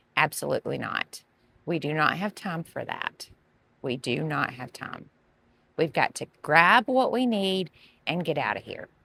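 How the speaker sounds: mock strict, stern, firm parent voice. Parent refusing kids who beg to pet the puppies and kittens: stern voice. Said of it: "your stern voice".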